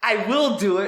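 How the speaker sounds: high, loud, fired-up delivery. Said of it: "I'm just like".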